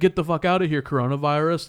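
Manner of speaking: acted hostile, aggressive, abusive jeering tone. Retelling how the man at the bar started abusing her: imitating a hostile taunt. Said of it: "starts giving her shit".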